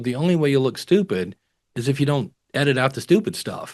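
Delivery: ordinary talk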